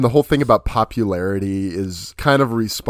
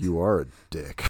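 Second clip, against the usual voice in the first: lower, quieter muttering under the breath; 4 semitones lower, 7 dB quieter than usual. Retelling a film scene where a character mutters a reply: imitating someone muttering under breath. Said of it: "He just says it under his breath".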